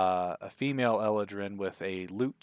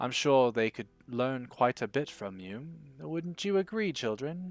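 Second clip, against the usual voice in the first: gentle, mild delivery; 4 semitones higher than usual. A female Eladrin with a lute addresses a visitor and the children; very soft voice. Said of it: "she very softly says".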